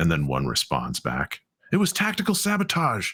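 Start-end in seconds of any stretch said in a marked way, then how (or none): 1.7-3.1 very high, squeaky, squabbling put-on voice. Narrator voices one of two arguing figures answering back, high-pitched character voice. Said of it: "arguing in their high-pitched voices".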